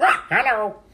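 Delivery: very high, squawking, squawky parrot voice. Talking about loving parrot jokes, saying hello in a parrot voice. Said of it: "I love doing that parrot voice".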